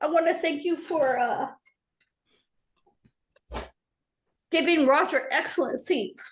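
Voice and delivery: tearful, crying while speaking. Just unmuted on a call, a person gives thanks while crying. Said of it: "I'm sorry I'm crying".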